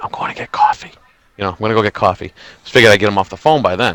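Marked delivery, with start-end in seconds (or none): 0.0-2.3 hushed whisper under the breath. Retelling a quiet aside to a friend while on the phone: retelling a whisper. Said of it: "I whispered to my buddy".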